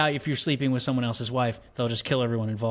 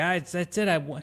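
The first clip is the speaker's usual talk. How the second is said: put-on strung-out crying voice, higher; 6 semitones higher than usual. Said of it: "and she's crying".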